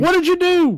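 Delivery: mock yell, high and loud.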